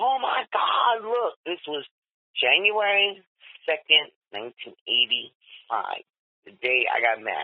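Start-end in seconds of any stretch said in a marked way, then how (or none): 0.0-1.4 put-on man's scream, pitched much higher. Telling a wedding-day story, acting out a man's screams: imitating a man screaming.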